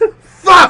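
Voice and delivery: mock loud, high-pitched angry one-word outburst. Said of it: "he's just mad".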